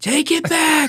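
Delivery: shrill, very high-pitched, acted-out scream. Retelling how dad held the present up to the sky: imitating dad screaming. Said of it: "and was screaming".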